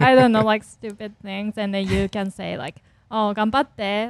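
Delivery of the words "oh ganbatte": mock sarcastic ironic tone, louder. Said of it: "you're thinking that's not gonna happen".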